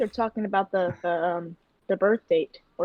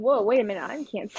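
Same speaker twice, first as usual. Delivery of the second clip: normal talking voice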